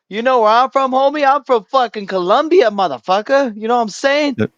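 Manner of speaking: confrontational, squaring-up, heated argument tone. Retelling what someone says in a heated argument: imitating someone arguing heatedly. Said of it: "whenever you get into a heated argument".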